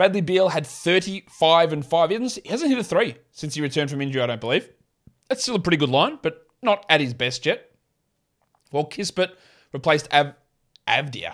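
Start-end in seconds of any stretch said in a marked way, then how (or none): 8.7-11.3 unintended slip into an Australian, Aussie accent. Reading basketball player notes aloud: sounding australian. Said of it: "that sounded so Aussie".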